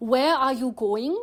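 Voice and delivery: English spoken with put-on Korean accent. Showing how Korean speakers might pronounce English: imitating Korean-accented English. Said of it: "how Korean people who might not be very fluent in English, how they would pronounce English".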